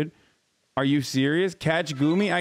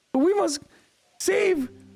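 high, strained put-on character voice. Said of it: "I can't do this voice".

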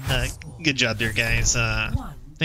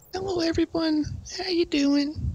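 put-on girl voice. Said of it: "Do the girl voice?".

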